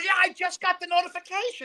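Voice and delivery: put-on delighted, cheery, happy voice, very high. Speaker retells Yerkew's reply about getting the same notification: imitating Yerkew sounding happy. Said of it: "Like he's so happy".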